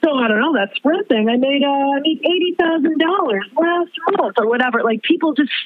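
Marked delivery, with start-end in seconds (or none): 0.0-4.3 brash, loud, high-pitched, boastful tone. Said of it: "such loud brag".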